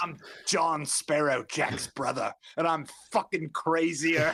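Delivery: odd, weird put-on Cockney accent. Pitching a knockoff pirate sequel character, in a weird cockney accent. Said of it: "doing a weird Cockney accent".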